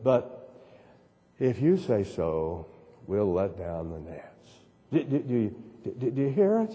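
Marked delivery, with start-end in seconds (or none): 0.0-4.5 yielding, resigned, giving-in delivery. Quoting the second line of a passage aloud, in a resigned tone. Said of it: "the resignation of the second line".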